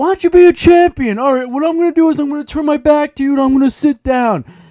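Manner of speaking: shrill, very high, loud, taunting shriek. Retelling how Ronda screamed at a woman who left the ring, imitating Ronda screaming. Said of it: "Ronda's like screaming like".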